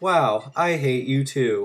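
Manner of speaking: slow, deliberate, each word drawn out. Imitating the test voice answering a middle finger: imitating GLaDOS. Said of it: "and she's like".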